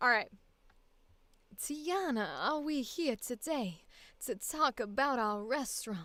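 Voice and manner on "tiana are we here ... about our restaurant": easy, slow, southern Louisiana accent. Trying out a voice, the speaker asks Tiana a question; Louisiana accent. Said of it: "Do I have a Louisiana accent today?".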